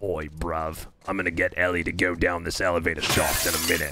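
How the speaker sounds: low, fight-ready tough-guy voice. Describing how a game character talks, imitating a tough-guy way of talking. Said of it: "so he talks like this".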